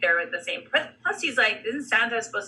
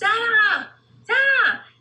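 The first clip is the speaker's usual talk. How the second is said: put-on shrill, high-pitched child's voice yelling; 13 semitones higher, 6 dB louder than usual. Retelling a kid calling to Santa through plexiglass, imitating London yelling. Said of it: "London was yelling like".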